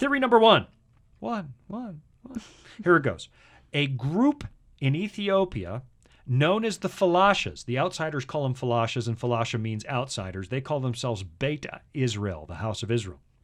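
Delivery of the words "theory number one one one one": very high, loud, heavenly-sounding announcer voice. Announcing the first theory about the Ark with a mock echo: announcer in the sky voice. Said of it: "I wanna sound like an announcer in the sky".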